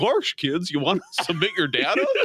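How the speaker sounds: swooping, sing-song cartoonish voice, pitch swinging widely. Imagining a Disney display greeting voters: Goofy voice. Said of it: "Goofy's like".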